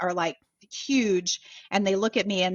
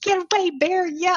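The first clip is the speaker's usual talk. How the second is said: mock yell, very high pitched; 11 semitones higher, 6 dB louder than usual. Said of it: "I'm yelling at this bear".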